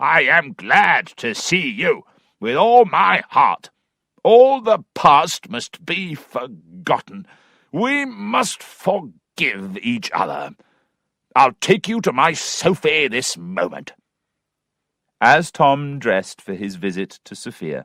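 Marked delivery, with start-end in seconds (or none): 0.0-13.9 hunting-voice cry, calling out. Narrator reads Mr. Weston greeting his old friend Tom, Mr. Weston crying out. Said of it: "[name] joined them. / and with his hunting voice cried out".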